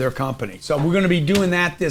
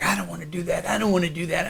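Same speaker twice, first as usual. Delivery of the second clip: put-on old man voice, quieter; 2 semitones higher, 6 dB quieter than usual. Retelling being made to dress up every Halloween, in an old man voice. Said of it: "I sound like an old man".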